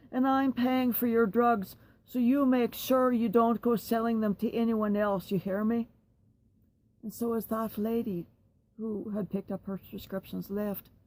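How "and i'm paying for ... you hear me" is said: very loud, booming, blaring, stern voice. Retelling what a loudmouth said to someone waiting for prescriptions, retelling very loud speech. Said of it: "she said in a very loud voice".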